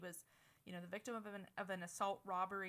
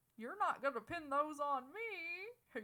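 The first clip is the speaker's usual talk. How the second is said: mock tearful high whimpering whine, me drawn out; 8 semitones higher, 5 dB louder than usual. The speaker repeats a man's words in a high-pitched, weepy voice. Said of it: "said in a high pitched, weepy voice".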